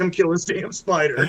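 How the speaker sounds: put-on yelling, calling out loudly. Retelling standing on a table calling for help: imitating someone yelling. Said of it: "yelling for my wife".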